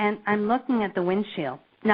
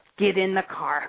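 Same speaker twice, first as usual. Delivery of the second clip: put-on upset voice. Retelling what an upset companion told them: imitating someone upset. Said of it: "And he is really, really upset".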